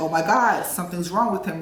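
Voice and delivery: ordinary talk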